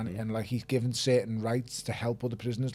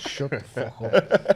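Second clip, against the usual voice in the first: loud, very slow, strange put-on voice; 2 semitones higher, 8 dB louder than usual. Retelling a reply to a son's teasing: imitating own past words in an odd put-on voice. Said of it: "I don't even know what that fucking voice I've just said was".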